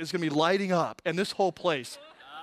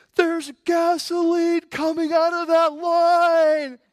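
very high shrill screaming, whole line drawn out; 9 semitones higher, 8 dB louder than usual. Retelling an argument at a gas station, the woman screaming at him. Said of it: "she screams at me".

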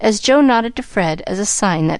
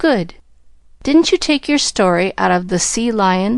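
plain reading voice

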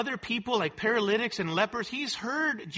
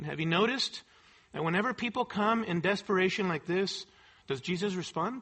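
plain

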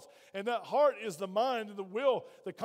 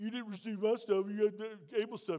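put-on, baby-like crying voice. Retelling the Bible story of Cain and Abel, Cain crying like a baby. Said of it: "He crying like a baby".

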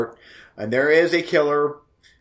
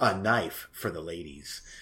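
mock seductive voice, lower and quieter; 7 semitones lower, 9 dB quieter than usual. Reading a movie poster's tagline aloud: put-on sexy voice. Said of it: "you went sexy voice at the end".

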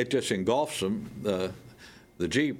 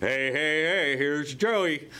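big, booming, high-pitched showman voice; 6 semitones higher than usual. Recalling Joe in a dog food commercial, imitating Joe's booming voice. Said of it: "Joe just had this big booming voice".

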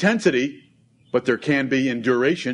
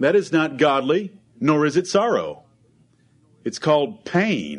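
normal talking voice

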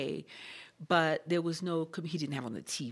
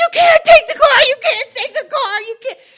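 shrieking, very high and very loud scream; 20 dB louder than usual. Speaker recounts embarrassing a man who would not listen, retelling own screaming. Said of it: "jumping up and down and screaming".

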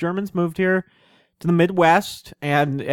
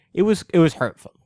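ordinary talk

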